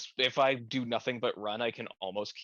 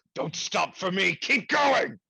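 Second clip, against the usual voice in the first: high, swooping, drawn-out yell; 8 semitones higher, 5 dB louder than usual. Voicing a character who urges another to flee: yelling in character. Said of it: "I'm just gonna yell".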